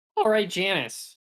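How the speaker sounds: voice cracking. Answering a question in a group conversation, voice cracking. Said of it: "I like the voice crack".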